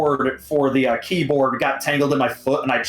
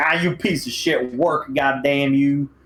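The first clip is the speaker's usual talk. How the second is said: irritated, annoyed, exasperated grumbling and cursing. Retelling cursing at a console that kept failing: own annoyed remark, not yelling. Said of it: "I wasn't, like, yelling".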